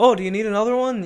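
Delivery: attempted Canadian accent coming out Irish-sounding. Describing polite Minnesotans, the speaker mimics one, in an accidentally Irish-sounding accent. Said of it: "I don't know why I sounded Irish".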